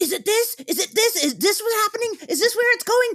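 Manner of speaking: play-acted, very high-pitched, loud screaming. Retelling how someone in the other room screamed questions during the movie: imitating Des screaming. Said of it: "screaming at me going".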